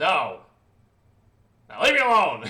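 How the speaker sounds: very loud, gruff, barking delivery. The game master answers a player's question as Brahm, in a gruff voice. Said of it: "a familiar gruff voice".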